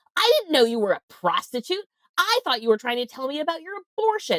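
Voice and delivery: put-on furious father voice, very high-pitched rant. Retelling a phone call from a father: imitating a furious father. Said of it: "my father called me furious on the phone".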